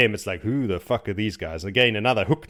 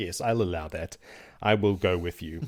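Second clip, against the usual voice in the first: mock regal dignity, lower pitch, quieter; 4 semitones lower, 5 dB quieter than usual. Retelling a book scene, voicing a queen: imitating a queenly tone. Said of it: "trying to remain queenly".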